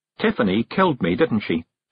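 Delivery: ordinary delivery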